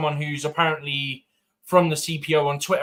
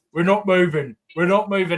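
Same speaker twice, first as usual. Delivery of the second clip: mock protesting voice, louder; 3 semitones higher, 4 dB louder than usual. Retelling a fan interviewed during a stadium protest: imitating a protesting fan. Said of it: "It's the way you said it".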